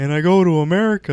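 put-on voice of a Canadian comedian. Retelling how comics in Ottawa used to talk: imitating a Canadian comic. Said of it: "some Canadian guy be like".

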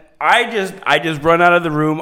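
ordinary delivery

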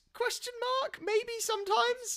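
put-on squeaky disbelief.

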